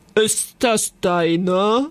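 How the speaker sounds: rough, raspy, gruff dragon voice. A clawed creature reaches through the window and speaks; rough, very deep voice. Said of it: "fragte eine raue, brunnentiefe Stimme".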